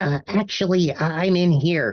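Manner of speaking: tiny, high, small-sounding little voice. A character speaks up from inside a gift basket in a tiny voice. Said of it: "you hear a tiny voice".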